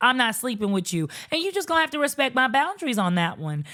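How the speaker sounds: ordinary talk, nothing marked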